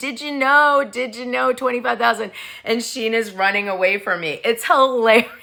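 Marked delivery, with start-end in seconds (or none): 0.0-2.3 mock yelling, screamed repeatedly. Describing a funny edited video, quoting the line chased with: imitating own screaming. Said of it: "I'm screaming at her".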